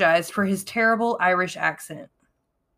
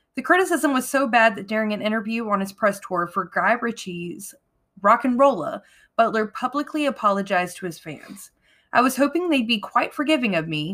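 ordinary talk, nothing marked

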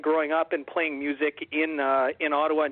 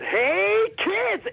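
very high, cartoonish clown voice. Retelling a surprise appearance behind the group: Binky the Clown voice. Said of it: "Binky the Clown from Garfield and Friends".

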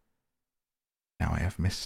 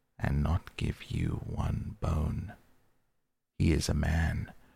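ordinary delivery

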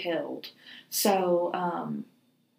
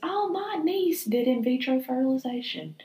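high-pitched put-on lady voice. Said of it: "and she goes".

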